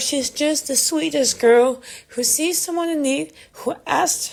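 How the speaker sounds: emotional, choked-up voice catching in the throat. Speaker stops to say they are getting emotional: voice choking up. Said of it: "I'm getting emotional just talk about it".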